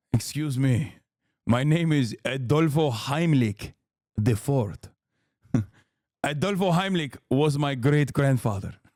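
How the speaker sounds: put-on, fake Argentinian accent. Playing a classic Argentinian character: put-on Argentinian accent. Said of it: "did not have this accent".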